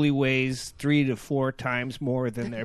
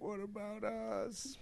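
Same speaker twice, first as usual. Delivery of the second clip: hushed, high put-on moan; 6 semitones higher, 16 dB quieter than usual. Joking that the drive-in casualties can still be heard: put-on moaning. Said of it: "drive-in moaning".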